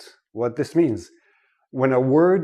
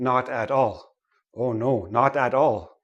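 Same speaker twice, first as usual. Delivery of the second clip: slow, choppy, over-careful, each word cut apart. Showing how learners wrongly say a phrase: separated, over-careful pronunciation. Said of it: "We don't say it like that".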